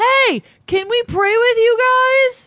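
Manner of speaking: mock yell, pitched high.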